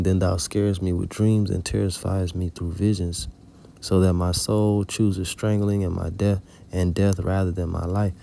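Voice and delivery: ordinary talk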